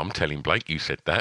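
said quietly. Retelling what someone beside the speaker said during a fight: retelling a quiet aside. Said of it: "And then just quietly".

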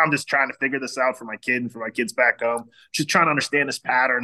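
put-on heavy, laid-on New Jersey accent. Retelling John's answer when the speaker asked his story: John's thick Jersey accent. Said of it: "in that thick Jersey accent".

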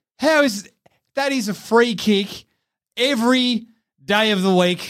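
put-on fed-up, exasperated, losing-it disbelief. Retelling what a man kept saying, imitating someone losing his mind. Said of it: "was losing his mind, just going".

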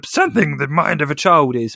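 bad, clumsy, botched goofy cartoon alien voice. Asked what Yoda says, the speaker answers in a Yoda impression sounding like Jar Jar. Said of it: "that sounded like that crappy Jar Jar impression".

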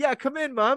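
put-on very high-pitched, young boy's voice. Retelling a scene where one character copies another: imitating a boy's voice. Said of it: "doing his voice going".

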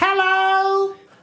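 put-on very high, silly, drawn-out voice. Retelling greeting people by the roadside, in a put-on voice. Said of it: "Did you do it in that voice?".

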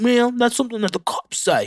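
attempted British accent. Recapping a series scene, quoting Jeffrey Dahmer with British accent. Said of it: "I don't know why I gave him a British accent".

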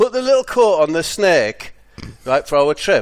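put-on loud, high-pitched hollering shout. Retelling Steve shouting down to a woman before a shop trip, imitating Steve shouting. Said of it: "He shouts like".

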